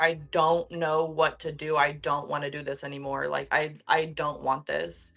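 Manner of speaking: acted tearful, pleading cry through sobs. Retelling own past words while lying sobbing on the office floor: retelling own sobbing plea. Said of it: "sobbing into the carpet and being like".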